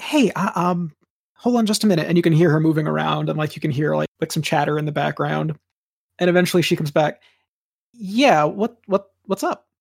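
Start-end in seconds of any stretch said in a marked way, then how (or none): 0.0-2.1 very slow, discreet, lightly hushed voice. Retelling how she answered the phone call, retelling a hushed answer. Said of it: "she answers kind of like a hushed voice".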